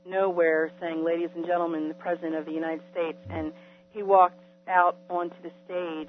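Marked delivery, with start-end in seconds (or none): none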